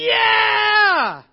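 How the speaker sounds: high-pitched, loud, joyful shout.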